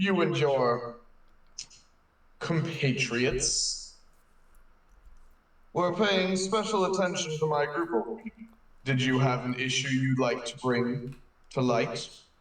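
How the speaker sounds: put-on archaic, old-fashioned formal tone. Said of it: "what's up with your tone".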